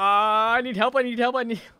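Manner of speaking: mock terrified panic. Retelling a man's calls for help, imitating terrified panic. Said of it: "I could hear the terror in his voice".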